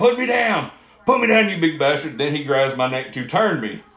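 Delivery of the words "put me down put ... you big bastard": put-on, high-pitched hollering. Wrestler retelling being carried around the ring by Cyrus: retelling a holler. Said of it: "The whole time I'm hollering".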